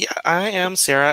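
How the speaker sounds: light, perky, very high voice. Storyteller voicing a newly named character, Sarah, introducing herself: light perky Sarah voice. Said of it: "her voice is very light and kind of perky".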